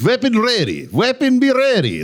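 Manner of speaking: put-on Israeli accent. Planning a joke at a firing range: put-on Israeli accent. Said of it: "I'm gonna talk like an Israeli the whole time".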